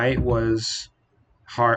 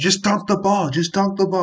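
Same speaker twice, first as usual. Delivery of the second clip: acted, high, insistent screaming yell; 8 semitones higher than usual. Retelling what a fan next to him kept yelling: imitating a fan screaming. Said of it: "he's screaming at Ayton".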